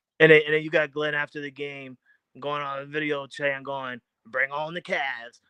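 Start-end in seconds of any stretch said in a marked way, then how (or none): 4.3-5.3 slow, small, little movie-character voice. Imitating Glenn on a video chat after the game: Forrest Gump voice. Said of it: "in his little Forrest Gump voice".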